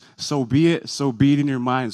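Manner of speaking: normal talking voice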